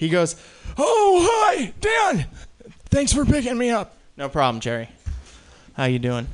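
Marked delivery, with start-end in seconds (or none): 0.8-4.0 put-on very high-pitched elderly man voice. Telling about an old man getting into his car: [name] old-man impression. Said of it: "I'm going to do an impression now".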